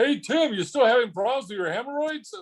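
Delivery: very high, loud yell. Recalling how a man would yell at tim back at college: retelling a yell. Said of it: "But he'd also yell at you".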